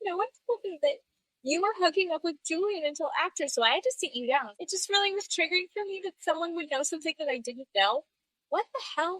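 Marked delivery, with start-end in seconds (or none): 0.0-8.0 emotional, weepy, high, tearful delivery. Retelling an emotional after-show interview, imitating Lala crying. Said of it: "She had this very emotional interview in the after show where she's, like, crying".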